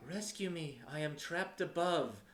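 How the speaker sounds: sorrow-filled, high woman's voice calling out. Voicing a trapped voice calling into the characters' minds: sorrow-filled feminine voice. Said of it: "the same sorrow-filled feminine voice call out".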